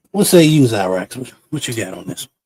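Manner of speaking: plain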